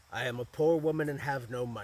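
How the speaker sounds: put-on croaking old woman voice. A narrator voices an old woman at the parsonage kitchen door: croaking. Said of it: "she croaked".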